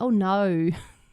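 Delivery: attempted Australian accent on "oh no". Self-talk, saying oh no the Australian way: attempted Australian accent. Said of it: "I'm trying to say it in an Australian way".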